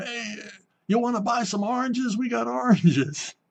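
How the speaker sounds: put-on acted drunk voice. Retelling what drunk men said to a ship's officer: imitating drunk men talking. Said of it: "they're drunk off their ass, and they're going".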